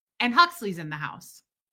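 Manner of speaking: ordinary talk, nothing marked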